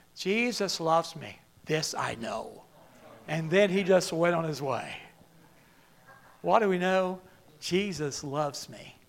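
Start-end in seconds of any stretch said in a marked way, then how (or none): 0.2-2.6 put-on deep, soft Irish accent. Speaker quotes a man answering their question, deep irish accent. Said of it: "again in that deep Irish accent".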